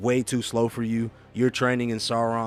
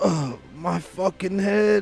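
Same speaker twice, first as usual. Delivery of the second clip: dazed, high-pitched, just-woken groggy voice; 8 semitones higher than usual. Voicing Wyatt as he gets up and looks around, dazed. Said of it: "He goes".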